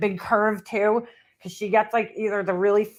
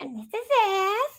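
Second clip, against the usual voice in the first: odd, squeaky, very high-pitched put-on voice; 12 semitones higher than usual. Mocking a woman showing things on camera, imitating a weird high-pitched voice. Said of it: "that fucking weird high-pitched voice".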